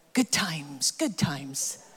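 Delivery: low, slow mutter under breath. Retelling a child coming through the back door: imitating muttering under breath. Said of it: "just kind of muttering under his breath".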